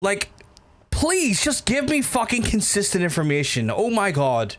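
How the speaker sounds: fed-up, exasperated tone. Speaker complaining mid-conversation, annoyed. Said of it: "Sorry, I'm already getting annoyed".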